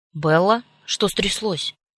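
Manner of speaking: nearly panicking voice. A father grabs the phone when his daughter calls, asking almost panicked. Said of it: "чуть не с паникой в голосе".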